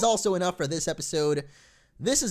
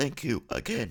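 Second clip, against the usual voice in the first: put-on robot voice, lower and quieter; 6 semitones lower, 5 dB quieter than usual. Voicing Magnezone thanking the player again: robot voice for Magnezone. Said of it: "That's my robot voice".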